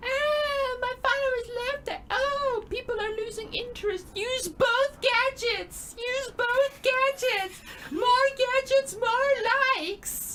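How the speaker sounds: very high, screaming villain voice. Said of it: "screaming that at you in a Harley Quinn voice".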